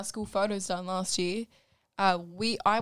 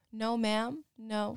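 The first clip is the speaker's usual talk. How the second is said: bad, terrible, put-on American accent; 4 dB quieter than usual. Speaker quotes the park staff answering her question: terrible American accent. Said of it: "that was a terrible American accent".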